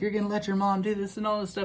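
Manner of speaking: yelling, voice shot way up high. Retelling a kitchen fight where she yelled at the speaker: imitating Morgan yelling. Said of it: "yelling at me".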